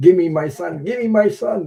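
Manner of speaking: high-pitched screaming. Retelling waking in a taxi to the hospital: imitating mom screaming. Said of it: "My mom was screaming".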